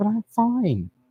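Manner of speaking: squeaky, high-pitched, swooping sing-song voice. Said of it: "I don't know why my voice is all high-pitched like this".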